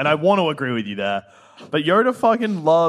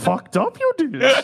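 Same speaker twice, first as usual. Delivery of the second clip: put-on little old alien voice, pitched higher; 9 semitones higher than usual. Joking with friends about Yoda, answering in a Yoda voice. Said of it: "my Yoda voice is okay".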